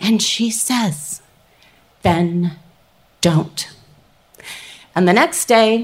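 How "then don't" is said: incredibly calm, even, steady, unruffled tone. Retelling what a woman said in reply: imitating a calm steady voice. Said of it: "in this incredibly calm, steady voice".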